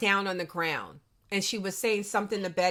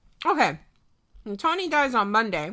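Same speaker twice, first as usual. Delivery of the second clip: muffled mouth-full speech, chewing through the words. Co-host discussing a show while eating dinner, talking while eating. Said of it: "Sorry, I'm eating my dinner".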